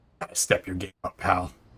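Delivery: quiet whispered dig. Leaning over to another character in the scene, whispering. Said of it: "just whisper to him".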